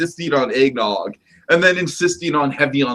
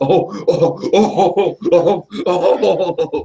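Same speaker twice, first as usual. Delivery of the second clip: very slow, drawn-out, mocking, sarcastic "oh-oh" laugh; 4 semitones higher than usual. Explaining a gag, then doing the Adventure Balloon Dude sarcastic laugh. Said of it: "my Adventure Balloon Dude sarcastic laugh".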